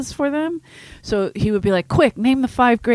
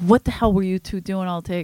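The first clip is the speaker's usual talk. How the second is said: mock fed-up, angry, exasperated tone. Retelling asking a waitress what she did all day, imitating own angry self. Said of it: "'Cause now I'm pissed".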